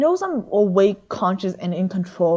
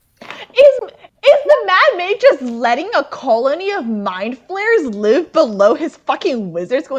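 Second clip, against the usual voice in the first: high-pitched, incredulous, disbelieving tone; 8 semitones higher, 4 dB louder than usual. Asking the group about the Mad Mage: disbelieving voice. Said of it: "I don't know why I said that in a disbelieving voice".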